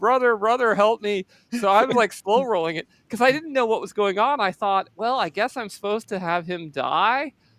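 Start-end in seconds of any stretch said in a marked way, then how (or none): 0.0-1.2 mild, desperate pleading cry. Retelling how a dying priest screamed for the speaker's help, imitating a priest screaming. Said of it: "the poor priest was like screaming for me".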